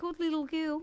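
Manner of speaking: put-on Greek Australian accent. Podcast guest repeating an earlier phrase, put-on Greek Australian accent. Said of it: "I just put on like a bit of a Greek Australian accent".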